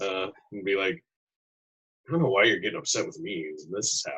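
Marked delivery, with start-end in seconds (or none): 2.1-4.2 soft, hushed, low half-whisper. Speaking as John Jacob to a turtle below: half-whispering in character. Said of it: "John Jacob will whisper down to".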